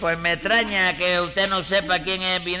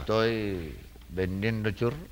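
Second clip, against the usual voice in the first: very soft, low, slow, hushed. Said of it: "¿y por qué lo dice tan bajito?".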